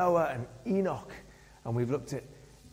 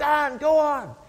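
high, loud, encouraging cheering shout; 11 semitones higher, 7 dB louder than usual. Retelling a race where the club chairman ran behind, imitating someone shouting encouragement. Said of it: "And he was shouting out".

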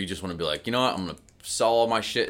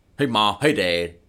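put-on voice made younger, teenage-sounding; 3 dB louder than usual. In a role-play dinner scene, playing a teenager arriving home to the parents: imitating teenage Max. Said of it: "I'm trying to change my voice to sound younger here".

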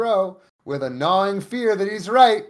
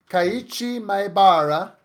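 fake, put-on Italian accent. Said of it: "I did that with my Italian accent".

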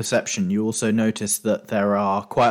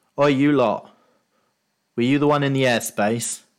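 calling out, voice sent down from above; 3 semitones higher than usual. Game master voicing a man on a watchtower, shouting down at the group. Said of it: "shouts down at you".

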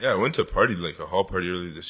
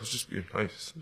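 put-on whisper, quieter; 2 semitones higher, 10 dB quieter than usual. Retelling what a guy said quietly to his friend downtown: imitating someone whispering. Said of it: "The guy whispered to his boy".

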